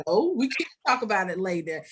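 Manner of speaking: ordinary talk, nothing marked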